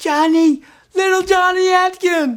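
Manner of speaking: shrill, very high-pitched shout. Recalling someone shouting his name across a street, imitating Denise Tourover's shrill voice. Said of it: "in this high-pitched, shrill voice".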